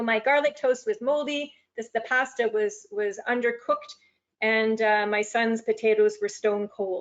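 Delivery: normal talking voice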